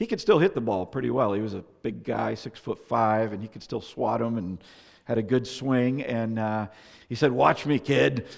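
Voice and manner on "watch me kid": put-on rough, gruff New England accent. Speaker quotes a big man about to show his swing, gruff New England accent. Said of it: "in his gruff New England accent".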